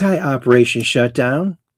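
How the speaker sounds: plain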